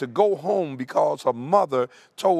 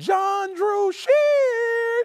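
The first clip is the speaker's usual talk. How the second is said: very high, drawn-out motherly calling voice. Recalling his mother calling him home as a child, imitating mom's high-pitched call. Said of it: "My mom had a high-pitched voice".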